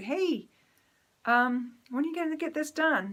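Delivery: gentle sweet tone. Showing how she asks without hurting his feelings, in a nice, sweet voice. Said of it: "I have to say it in a nice, sweet voice".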